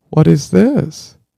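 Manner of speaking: put-on crushed, pathetic, high, pitiful little child's voice. Retelling the daughter holding an empty candy bag: imitating a pathetic disappointed child. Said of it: "pathetically stared at it and said".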